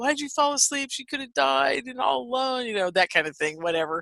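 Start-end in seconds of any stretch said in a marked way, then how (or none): 0.0-2.7 high, full-throated top-of-lungs screaming. Retelling a father's reaction on finding grandmother asleep: imitating someone screaming. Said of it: "my dad is just screaming, you know, at the top of his lungs".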